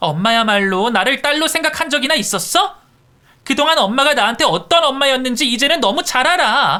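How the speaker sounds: shouting. Answering the mother back in a courtroom quarrel: yelling. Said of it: "이게 지금 어디서 소리를 질러?".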